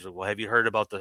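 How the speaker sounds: put-on whisper.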